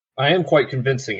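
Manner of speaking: ordinary talk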